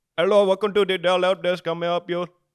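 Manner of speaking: high, loud mock Indian accent.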